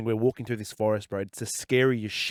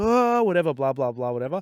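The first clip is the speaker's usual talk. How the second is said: put-on rowdy, high, light, boyish hollering; 5 semitones higher than usual. Retelling how the boys screamed in the tunnels: imitating boys screaming. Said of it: "The boys are screaming".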